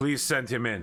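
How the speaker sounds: English lightly tinged with German. Voicing someone inside the office inviting a visitor in: slightly German-accented English. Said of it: "in a sort of slightly Germanically accented English".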